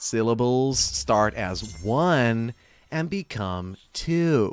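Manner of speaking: bad put-on California valley girl accent. Showing a Californian Valley girl accent after describing it: terrible Valley girl accent. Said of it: "I know it's a terrible impression".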